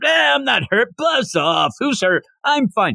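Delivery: mock dismissive shout. Recounting a scene with a badly wounded fighter, retelling Inosuke yelling. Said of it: "he's yelling that".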